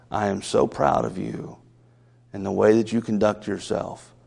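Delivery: very low, hushed tone. Retelling what a teacher said after bending down beside them, very low tone. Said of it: "she said in a very low tone of voice".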